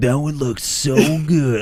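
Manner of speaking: skeevy, creepy delivery. Quoting own past remark to deny it: imitating a creepy tone. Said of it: "all creepy".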